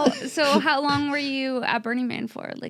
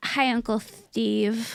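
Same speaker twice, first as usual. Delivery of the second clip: imitated fake lisp, put-on lisping voice; 3 semitones lower than usual. Retelling a girl at Thanksgiving dinner greeting Uncle Steve: imitating Thea's self-induced lisp. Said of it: "Self-induced li- lisp".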